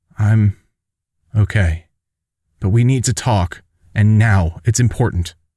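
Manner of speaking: usual speaking voice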